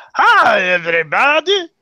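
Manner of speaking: very high, loud, belted, swooping up and down. Correcting another speaker's attempt at the greeting, Dr. Nick Riviera impression. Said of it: "I think it's more like".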